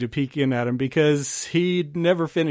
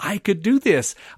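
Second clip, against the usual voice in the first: put-on excited voice, higher pitch; 5 semitones higher, 4 dB louder than usual. Retelling own childhood thoughts after watching a scene: imitating own excited thoughts. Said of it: "just so excited".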